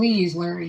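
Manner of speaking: earnest begging plea, acted out. Retelling how people begged the dad: imitating someone begging. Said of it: "they would beg him".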